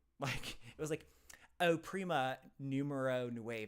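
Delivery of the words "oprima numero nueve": put-on clumsy anglicized Spanish, terrible heavy English accent. Retelling a government phone message: imitating terrible English-accented Spanish. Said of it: "it said it exactly the way that I just said it".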